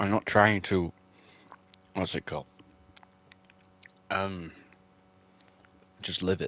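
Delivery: speaking while chewing food, mid-meal. Talking to listeners while eating a pot noodle, talking while eating. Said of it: "I'm eating right now".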